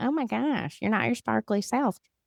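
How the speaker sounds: woman's voice. Retelling what a woman said when the speaker sat down, imitating a woman's voice. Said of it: "Her voice is kind of like that".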